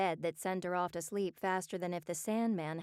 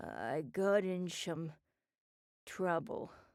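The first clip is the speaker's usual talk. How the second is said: put-on slurred speech. As Oz, answering Beth's question, slurred. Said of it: "he slurred".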